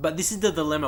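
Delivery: ordinary talk, nothing marked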